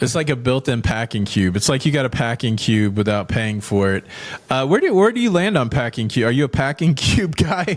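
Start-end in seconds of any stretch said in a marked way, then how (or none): 6.3-7.8 words spoken through laughter. Asking another speaker about packing cubes, laughing while talking. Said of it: "You couldn't even finish the sentence without".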